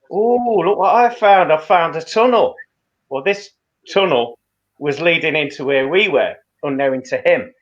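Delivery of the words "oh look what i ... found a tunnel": loose, sort-of put-on Liverpool Scouse accent. Retelling what a man in a dark tunnel said: imitating a liverpool accent. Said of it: "in a sort of Liverpool accent".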